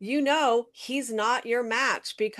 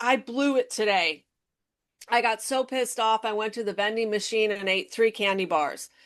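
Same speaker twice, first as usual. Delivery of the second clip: ordinary delivery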